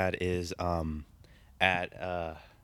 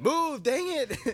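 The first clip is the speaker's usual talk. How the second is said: acted, very high, fed-up, annoyed yell; 3 dB louder than usual. Retelling getting mad at a classmate blocking the way: imitating own yell. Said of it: "I yelled it out".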